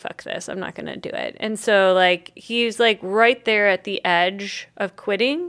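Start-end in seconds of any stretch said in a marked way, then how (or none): 0.0-1.4 frustrated, resigned, whispered delivery. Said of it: "He's super frustrated".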